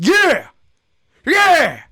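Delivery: piercing, very high, shrill, swooping scream. Showing listeners how to react when someone gives them credit, screaming. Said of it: "Sorry I screamed in your guys' ears".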